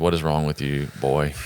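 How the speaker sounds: ordinary delivery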